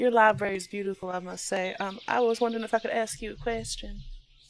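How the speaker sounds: very hushed, soft, trained library hush. Player's character approaching the owl lady in her library: very hushed voice. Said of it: "in a very hushed voice".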